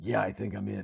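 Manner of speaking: terse, spare, minimal action-hero style delivery. Mocking an action hero's only dialogue: Keanu Reeves as John Wick impression. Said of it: "the height of John Wick dialogue is".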